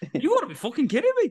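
very high, loud, put-on Irish accent. Speaker showing what they'd say to someone in public, Irish accent. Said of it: "I'll do it in an Irish accent".

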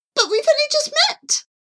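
very high, startled, alarmed pigeon coo. Charlie answers Jean-Claude, who has just asked her to fly away: cooing in alarm. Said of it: "Charlie cooed in alarm".

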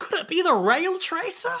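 high whining voice. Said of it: "says Jacuzzi in his normal".

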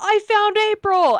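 shrill, very high-pitched, loud shouted yell. Recounting a scene, quoting what one person yelled out, retelling a yell. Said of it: "dumbass Drew over here yells".

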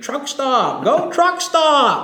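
put-on very high, swooping, wild cheering scream. Retelling how dad cheered at his first wrestling show: imitating screaming at the top of lungs. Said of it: "He was screaming".

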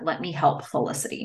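plain

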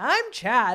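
loud, overcharged, mock way too much energy. Retelling a take after asking for energy, imitating Chad, too much energy. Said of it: "that's too much energy".

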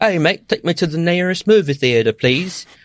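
failed put-on British accent, high-pitched. Imagining what he'd say using public transportation: bad British accent. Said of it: "For whatever that accent was that [name] just tried to do".

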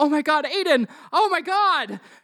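panicked, frantic outcry at very high pitch. Narrating a scene where Dr. Smith kneels by a man who just dropped, frantic Dr. Smith cry. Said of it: "Smith frantically looks at him".

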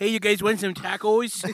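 put-on northern Midwest accent.

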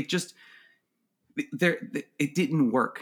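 ordinary delivery

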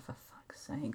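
unvoiced, whispered mutter.

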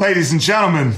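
put-on halting actor voice. Retelling a host introducing a band: Christopher Walken impression. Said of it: "he's like".

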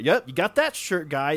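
chipper, easygoing, cheerful upbeat voice. Imitating a character's upbeat attitude: imitating cheerful upbeat guy.

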